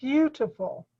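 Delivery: emphasis on beau, first syllable of beautiful. Modeling a word's pronunciation for a listener who repeats it, stress on beau in beautiful. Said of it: "emphasis is on the first part of the word".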